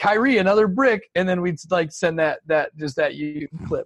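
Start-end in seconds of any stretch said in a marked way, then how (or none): 0.0-1.1 high, loud mock heckler yell. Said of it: "It was like".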